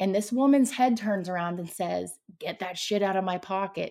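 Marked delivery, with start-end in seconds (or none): 2.4-3.9 put-on, electronic, scary-movie demonic voice. Retelling what a woman said during a prayer, electronic demonic voice. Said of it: "Like in the worst electronic demonic voice".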